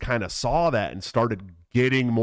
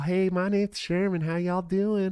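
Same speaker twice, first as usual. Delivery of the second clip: dainty, ladylike, pitched-up effeminate voice; 8 semitones higher than usual. Telling a story about grandma's street, imitating Sherman's voice. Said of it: "Talk like this".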